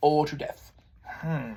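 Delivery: plain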